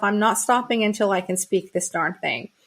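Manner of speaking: usual speaking voice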